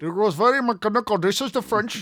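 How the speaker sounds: bad put-on Indian accent, high and loud. Speaker, describing learning French, slips into a terrible Indian accent. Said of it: "a terrible Indian accent".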